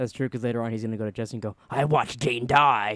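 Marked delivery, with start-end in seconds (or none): 1.7-3.0 loud, badly drawn-out delivery. Retelling a scene where Walt talks to Jesse: worst Walt impression. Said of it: "You have the worst Walt impression".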